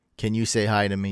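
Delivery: plain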